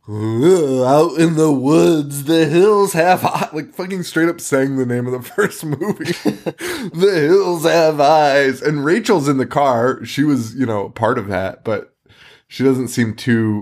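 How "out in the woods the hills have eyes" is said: slow, unhinged, insane put-on maniac voice. Retelling how a man driving the bus acted like a maniac, insane character voice. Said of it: "doing this insane character voice".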